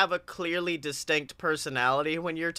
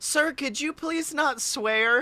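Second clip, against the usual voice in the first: much higher mock complaining voice. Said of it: "someone in chat who just goes".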